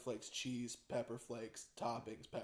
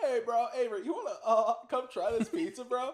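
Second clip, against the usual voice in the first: very high, squeaky cartoon fish voice; 10 semitones higher, 8 dB louder than usual. Retelling what Gav said to the speaker: imitating Gav's SpongeBob-fish voice. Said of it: "he sounds like the fish from SpongeBob".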